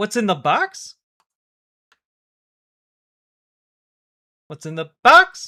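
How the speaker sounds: swooping, sing-song, wildly swinging pitch, repeated. Answering a request from another speaker: Brad Pitt voice. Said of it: "In Brad Pitt voice".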